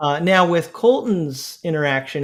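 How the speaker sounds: ordinary delivery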